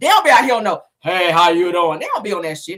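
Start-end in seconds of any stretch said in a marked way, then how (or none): 1.0-2.0 deep, slow put-on voice. Describing how the trainers around here don't greet people, in a deep voice. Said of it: "talking in no damn deep voice".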